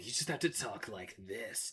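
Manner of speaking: very low, very quiet murmur. Speaker showing how easy the voice is to do, Shadow the Hedgehog voice. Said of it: "a Shadow voice is no problem".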